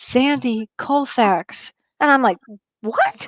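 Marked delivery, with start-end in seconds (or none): 0.0-1.7 low, hushed, close-to-the-ear stage whisper. Retelling how his father half-whispered a name in his ear, half-whispering. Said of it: "he whispers in my ear".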